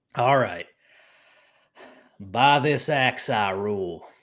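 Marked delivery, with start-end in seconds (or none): 2.2-4.0 drawled in a Texas accent. Asked to repeat his one-liner: Conan the Barbarian as a Texan. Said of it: "what would Conan the Barbarian sound like as a Texan".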